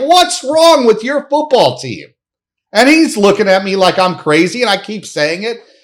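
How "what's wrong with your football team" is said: high, angry yelling scream. Retelling screaming at a Dolphins fan seated nearby: re-enacted screaming. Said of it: "I start screaming at the guy".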